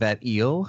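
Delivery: mock snippy, snarky little dig. Quoting a book character's remark about an eel: imitating a snippy character. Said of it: "even snippy about the eel".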